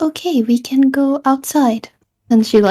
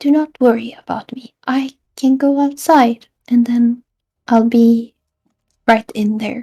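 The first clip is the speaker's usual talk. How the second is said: reassuring, untroubled character delivery. Voicing a character in a group role-play game, said more quietly. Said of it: "she says it more quietly".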